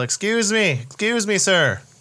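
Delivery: shouted, high-pitched, drawn-out yell. Calling out to a stranger during a game: yelling in character. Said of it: "I'm gonna yell".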